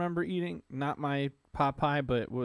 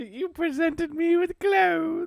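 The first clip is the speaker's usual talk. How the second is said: put-on very high, loud childlike voice, British accent; 14 semitones higher, 7 dB louder than usual. Told their voice sounds like Dobby, the speaker quotes him; childlike British Dobby voice. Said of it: "That's my uh childlike uh British voice".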